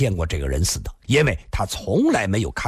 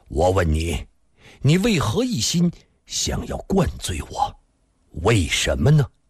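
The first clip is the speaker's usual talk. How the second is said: ordinary delivery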